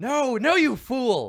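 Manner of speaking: very slow, very high, very loud drawn-out shrieking. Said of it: "is shrieking into your mind".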